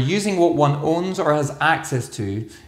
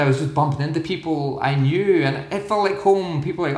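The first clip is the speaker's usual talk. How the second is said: usual speaking voice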